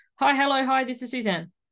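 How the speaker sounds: mechanical robotic voice. Reading own past phone greeting aloud, imitating own robot voice. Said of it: "robot voice".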